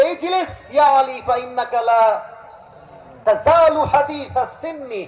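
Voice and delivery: high, loud scolding tone.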